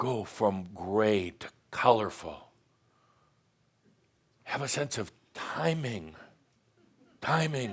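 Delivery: theatrical speaking. Speaker gives advice on acting it out, speaking dramatically. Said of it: "(speaking dramatically)".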